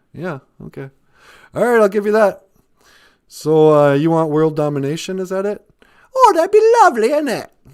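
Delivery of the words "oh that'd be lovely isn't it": very high and regal voice. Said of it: "you're starting to lose your accent".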